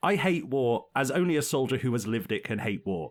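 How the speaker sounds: ordinary delivery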